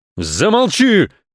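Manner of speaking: loud, high-pitched yelling shout. Reading a father's line as he jumps off the sofa at his son, shouted. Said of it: "закричал папа".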